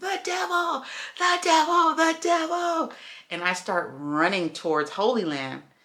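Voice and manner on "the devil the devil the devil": very high scream at the top of the lungs. Retelling running out of the apartment at night, imitating own screaming. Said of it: "screaming to the top of my lungs".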